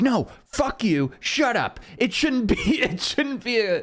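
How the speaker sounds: put-on slurred high-pitched drunk scream. Retelling an argument with a drunk man: imitating a drunk man screaming. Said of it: "he was just screaming at me about it".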